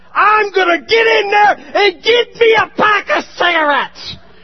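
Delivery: angry, furious, loud, high-pitched yell.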